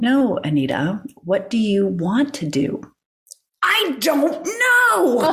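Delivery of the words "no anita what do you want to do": gentle, reassuring, calm, soothing voice. Retelling a conversation, the speaker voices the calm, soothing voice that answered her. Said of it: "this calm, soothing voice replied".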